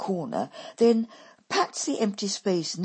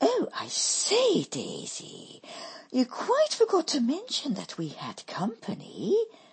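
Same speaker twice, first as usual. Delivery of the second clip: put-on posh accent, high and swooping; 6 semitones higher than usual. Narrator reads a woman's line on noticing a young man, in affected tones. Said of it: "she remarks in affected tones".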